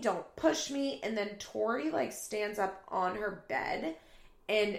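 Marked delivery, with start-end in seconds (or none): 0.0-1.0 put-on screaming, high-pitched, upset yelp. Retelling a roommate fight, quoting Janelle: imitating someone screaming. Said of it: "Janelle starts screaming".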